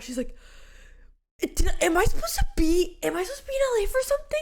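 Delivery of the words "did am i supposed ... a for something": put-on frantic, confused, high, rushed freaking-out panic. Retelling a confused phone call: imitating Tina freaking out. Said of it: "I get a call from Tina freaking out".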